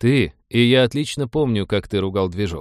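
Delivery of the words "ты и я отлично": ordinary delivery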